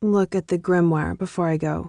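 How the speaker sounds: ordinary delivery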